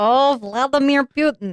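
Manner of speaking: high-pitched puppet frog voice with Russian accent. Introducing the day's topic, slipping into an accent: Russian Kermit the Frog voice. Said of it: "that kind of sounded like Russian Kermit the Frog".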